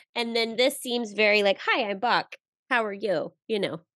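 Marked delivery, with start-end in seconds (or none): 1.6-3.3 confident, easy-going, self-assured put-on voice. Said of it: "he seems more self-assured".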